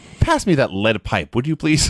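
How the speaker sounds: usual speaking voice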